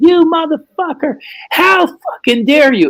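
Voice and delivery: mock, very high, piercing, shrill screaming. Retelling a phone call from Kim: imitating Kim screaming. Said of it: "She's screaming".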